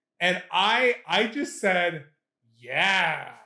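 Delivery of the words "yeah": mock, dripping, very heavy sarcasm. Retelling a reply to the manager: retelling a super sarcastic yeah. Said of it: "super sarcastic".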